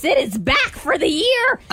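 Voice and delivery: high, slow, spooky cackling witch voice. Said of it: "time for me to use my spooky witch voice".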